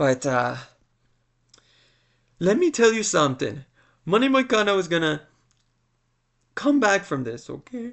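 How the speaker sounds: choked up, on the brink of sobbing. Speaker giving a fight prediction, choked up, near sobbing. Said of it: "I sounded like I was about to sob".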